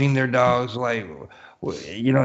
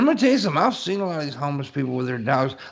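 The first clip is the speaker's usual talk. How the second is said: ordinary delivery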